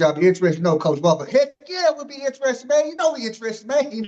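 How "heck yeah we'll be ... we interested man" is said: put-on excited voice, much higher pitch. Retelling how a coach answered an offer, imitating Coach Walker's high excitement. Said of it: "that voice get all high pitched".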